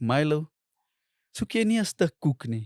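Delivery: put-on worried, caring, concerned tone. Retelling what a woman said to him: imitating a concerned voice. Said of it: "with a concerned voice".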